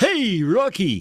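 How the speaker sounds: very high-pitched, put-on cartoon character voice. Fixing an earlier try at a cartoon line, Rocky and Bullwinkle cartoon voice. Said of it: "It's more like, hey, Rocky. That's uh, the voice he uses".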